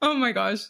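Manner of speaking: words breaking through laughter. Reacting to being teased, laughing while talking. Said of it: "Sorry, I'm still laughing about that".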